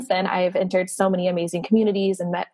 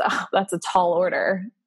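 mock-smug tone, slower pace. Speaker quoting what a man said to them, imitating a smug remark. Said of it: "he says it in such like a smug way".

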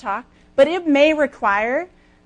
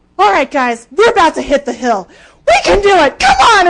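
high, swooping, pumped-up rallying yell; 7 semitones higher, 10 dB louder than usual. Retelling urging their yelling partners before a hill on the course: retelling a yell. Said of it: "And so we're all just like yelling".

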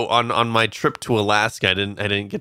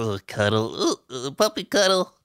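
put-on gushing, cutesy, sing-song baby talk; 4 semitones higher than usual. Describing holding a husky puppy that wanted to nuzzle: cutesy puppy-talk voice. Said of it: "I don't like that voice".

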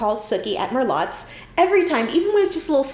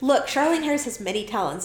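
ordinary delivery

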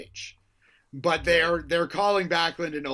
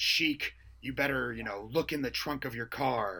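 put-on calm, creepy wrestler voice, lower and quieter; 4 semitones lower, 8 dB quieter than usual. Retelling a wrestling promo, imitating Backlund's calm creepy tone. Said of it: "especially when he's being calm, he's creepy as hell".

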